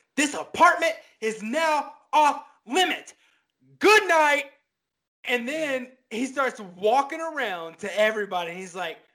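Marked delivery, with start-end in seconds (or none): 0.2-4.5 very high, furious, upset yell. Retelling what a man yelled at everybody in his apartment, imitating an upset man yelling. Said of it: "he gets really upset and he just yells".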